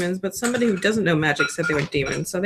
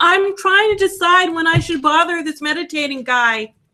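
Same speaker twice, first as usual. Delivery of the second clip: very high, really loud calling voice; 10 semitones higher, 3 dB louder than usual. Speaking in character, trying to get a meditating man's attention: said really loudly. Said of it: "really loudly".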